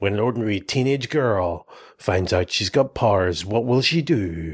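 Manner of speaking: epic, dramatic movie trailer narrator voice. Inventing film titles, announcing one in a movie trailer voice. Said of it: "This should be like a movie trailer".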